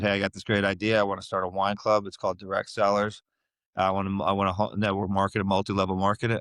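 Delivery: ordinary talk, nothing marked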